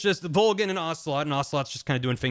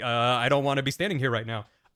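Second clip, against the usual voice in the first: put-on nervous voice; 3 semitones lower than usual. Retelling a game scene where Snake eyes a ticking clock, mock-nervous Snake.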